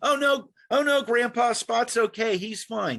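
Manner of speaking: fake young voice. Acting out a scam phone call, playing the scam caller. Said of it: "here's, uh, an example I use all the time".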